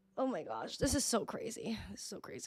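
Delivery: crying, tearful, breathy near-whisper. Thanking viewers while remembering a missed friend, crying while talking. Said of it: "I'm literally crying again on stream".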